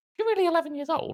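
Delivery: high, quick cooing voice.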